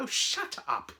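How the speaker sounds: ordinary delivery, nothing marked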